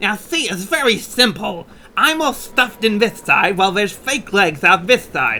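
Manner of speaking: voice like a cartoon character. Acting out how a character explained being sawn in half, voice like King Candy. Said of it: "You sound more like the King of Candy".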